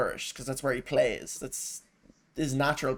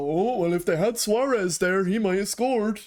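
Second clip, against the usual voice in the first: mocking commentator voice, higher and louder; 7 semitones higher, 6 dB louder than usual. Imagining what the commentators would say about a missed chance: mocking imitation of commentators. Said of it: "they go".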